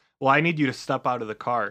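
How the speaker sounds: ordinary talk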